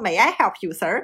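put-on fast, genuine London English accent. Describing an imagined english butler greeting residents: authentic london english accent. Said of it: "一口地道的英国伦敦腔".

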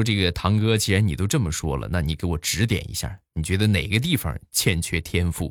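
ordinary delivery

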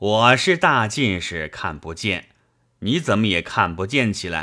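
plain

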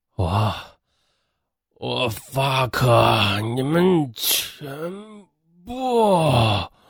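mock feeble, breathless swearing. Retelling a condemned man cursing the executioners: imitating feeble, breathless cursing. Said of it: "有气无力的骂道".

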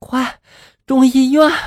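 high, breathless, out-of-breath, urgent shouting. A woman jumps into a taxi and calls to the driver, breathless urgent shout. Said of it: "上气不接下气的就喊道".

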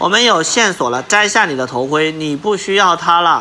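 ordinary delivery

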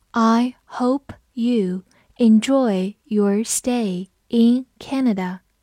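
slow, unhurried, careful and deliberate reading. Reading an English sentence for learners, slow reading. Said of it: "我们慢读一遍".

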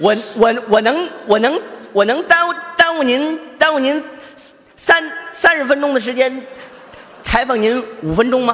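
stammering with repeated syllables. Acting out a stuttering reporter asking for an interview, stuttering. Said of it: "你你就你这么说".

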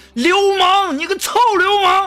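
very high, piercing, shrill yell. Retelling how a female coworker they bumped at lunch yelled, imitating a shout. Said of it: "这女同事就马上大喊".

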